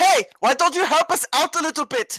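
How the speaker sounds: loud shout, projected upward. Voicing a character calling up to harpies hovering above: shouting at harpies above. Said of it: "Hummel's gonna shout at the Raven Harpies".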